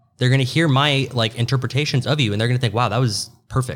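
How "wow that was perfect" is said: ordinary talk, nothing marked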